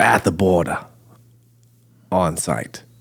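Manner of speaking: slowly spoken British-sounding accent. Repeating the phrase about recording at the border: British-sounding accent. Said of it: "Is that a British accent?".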